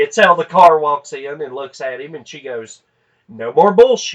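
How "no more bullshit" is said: loud, carrying voice projected across a room. Retelling how a woman confronted a car dealer: imitating someone saying it loudly. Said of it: "she said it loud enough that the entire Nissan dealership".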